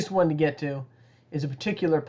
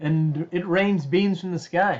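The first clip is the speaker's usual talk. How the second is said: plain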